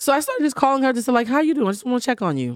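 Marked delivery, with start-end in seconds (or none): 1.3-2.5 put-on concern, higher pitch. Retelling calls made to a woman while only pretending, fake concern.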